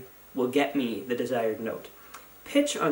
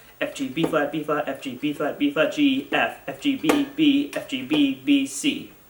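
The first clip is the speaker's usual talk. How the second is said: faster, a bit louder. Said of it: "let's speed it up".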